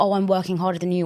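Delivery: normal talking voice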